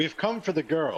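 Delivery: very self-assured. In a role-play, the speaker voices their character's line in a very confident tone. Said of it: "In a very confident tone of voice".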